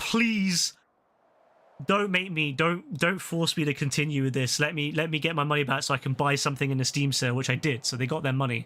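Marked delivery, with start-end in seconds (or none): 0.0-7.3 put-on pleading, repeated begging. Retelling a refund request to a store: imitating own begging. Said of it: "I literally begged them".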